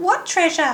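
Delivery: very high, squeaky rat voice with sharp squeaks. The head rat answers the captain who claims the treasure, squeaky rat voice. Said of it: "squeaked the head rat".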